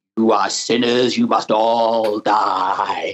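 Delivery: hammy, deep, very slow drawl, "die" stretched out. Showing the voice avoided for the witchfinder role: hammy Vincent Price impersonation. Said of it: "hammy impersonation of Vincent Price as Matthew Hopkins".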